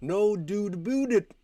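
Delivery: put-on Canadian accent. Mocking how Canadians supposedly say a phrase, in a mock Canadian accent. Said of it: "I guess as you would say, Canadians say".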